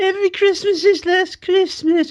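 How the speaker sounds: very high, slow, whiny nasal drawl. Asked to say it exactly the way he said it, doing a whiny nasal Danny Pink impression. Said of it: "very whiny and nasally and high-pitched".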